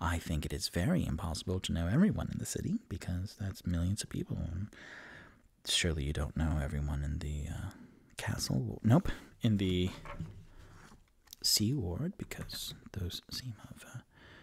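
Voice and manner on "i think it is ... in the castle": muttered under breath, much quieter and lower. Voicing a character in the game who answers another character, muttering under his breath. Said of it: "Rock goes under his breath".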